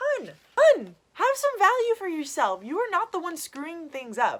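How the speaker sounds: mock high, coaxing, reassuring tone.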